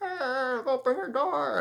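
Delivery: put-on very high, creaky old person voice.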